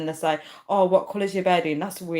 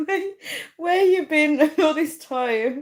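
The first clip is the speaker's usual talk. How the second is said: talking through laughter, higher pitch; 10 semitones higher, 3 dB louder than usual. Reacting to a viewer who returns to the live stream, laughing while talking. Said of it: "I'm actually dying with laughter".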